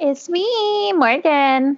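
put-on strong Valley Girl tone, pitched high. Podcast host introducing herself at the start of the show, sounding really valley girl. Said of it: "that sounded really Valley Girl".

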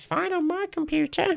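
high, slow, shrugging, dismissive brush-off. Retelling what other players say about the lag: imitating people dismissing complaints. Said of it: "I love that impression".

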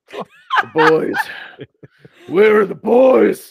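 loud, very high, belted character voice with wide swoops. Doing a Brock Samson impression for the others: Brock Samson voice. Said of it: "That was really good".

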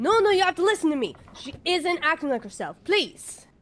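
frustrated pleading tone. Narrating as the group walks out of a classroom, voicing Locke: frustrated voice. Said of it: "you hear this frustrated voice".

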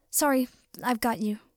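plain

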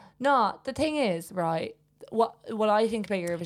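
sudden, very strong British accent. Imagining a listener's take on Eurovision, in a British accent. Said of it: "You went very British there".

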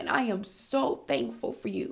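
voice choked with tears, high and slow. A podcast host thanks the listeners, speaking while crying. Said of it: "I'm crying".

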